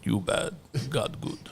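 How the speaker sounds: very quiet, whispered caveman voice. Admitting the accusation and repeating the line the way Ani said it, in Ani's caveman voice. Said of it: "and like caveman voice".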